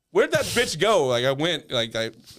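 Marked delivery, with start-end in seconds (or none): 0.1-1.0 high, loud yelling voice. Retelling confronting a worker in a store: imitating his own yelling. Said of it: "The first thing I started yelling".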